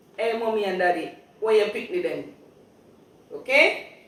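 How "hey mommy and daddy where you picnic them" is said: loud, quick, expressive Jamaican patois. Teaching a phrase, giving the patois version after the English: speaking patois. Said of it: "or the patois sentence to that".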